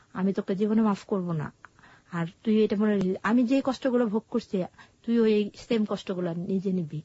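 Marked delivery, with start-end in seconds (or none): none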